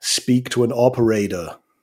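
put-on American accent. A British speaker retelling calling an automated bank line, put-on American accent. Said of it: "So I try and do an American accent. So I say".

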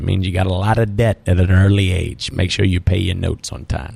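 imitated Cajun accent. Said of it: "he was a little Cajun banker from Lafayette, Louisiana, low accent".

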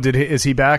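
ordinary delivery

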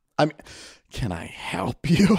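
soft, breathy, sighing, exasperated, put-upon annoyed tone. Retelling a worker who sighed as they walked up, imitating a heavy-sighing reply. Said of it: "she let out a heavy sigh".

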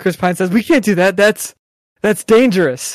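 usual speaking voice

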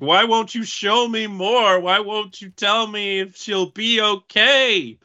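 put-on crying out. Speaker recapping a scene where a man cries out to another, retelling someone crying out. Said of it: "he's crying out to Aaron".

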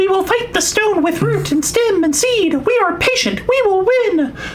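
very high, whiny puppet voice. Reading a card's flavor text spoken by the plant: Muppet-like plant voice. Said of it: "I don't know why it sounds like a Muppet show".

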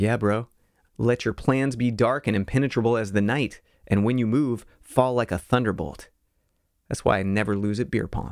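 ordinary talk

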